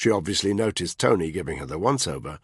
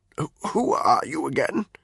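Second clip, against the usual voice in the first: cracked, high-pitched voice; 8 semitones higher than usual. Reading a novel aloud, a just-woken character asking a question: cracked voice. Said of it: "he asked in a cracked voice".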